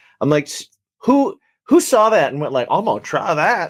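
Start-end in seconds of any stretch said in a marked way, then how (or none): 2.7-3.7 fake, put-on Southern American accent. Imagining who first tried a crusty mac and cheese, put-on southern accent. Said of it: "Why why do I always why do I always give it a southern accent?".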